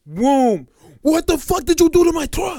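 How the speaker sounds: put-on heavy Russian accent. Retelling what a stranger shouted about his truck: imitating a heavy Russian accent. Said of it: "heavy Russian accent".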